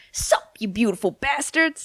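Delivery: slow, unhurried, drawn-out delivery. Trying the catchphrase after another speaker: Philip DeFranco impression. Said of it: "shall I try?".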